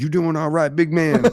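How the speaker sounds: street-talk delivery. Retelling how people nearby greet someone: imitating local street talk.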